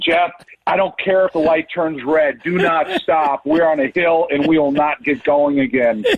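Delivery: plain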